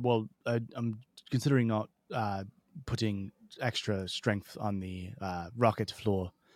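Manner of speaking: put-on very odd, weird Dutch accent. Retelling a Twitter exchange about a rocket launch: Elon Musk in weird Dutch accent. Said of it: "in a very weirdly Dutch accent".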